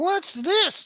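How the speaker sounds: squeaky little alien voice, very high. Retelling what an alien said to him: imitating a high squeaky alien voice. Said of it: "It sounded high and squeaky".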